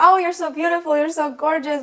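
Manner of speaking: put-on high-pitched screaming, pushy tone. Recounting a stranger who started screaming at the speaker, retelling a scream. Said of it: "started screaming at me like".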